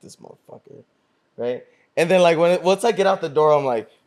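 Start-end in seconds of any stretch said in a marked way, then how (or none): 0.0-0.8 put-on quiet mutter under the breath. Retelling walking to the door past a man: imitating muttering under breath. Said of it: "talking under my breath".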